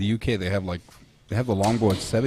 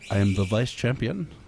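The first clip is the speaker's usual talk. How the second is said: English spoken with a put-on French accent; 2 semitones higher than usual. Joking about silver medals, speaker says a line in a put-on French accent. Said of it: "as the French would call it ... the French accent".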